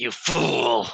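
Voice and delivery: words forced out through clenched jaw and gritted teeth. Narrating a story, the speaker voices an enemy's line through gritted teeth. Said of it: "he says through gritted teeth".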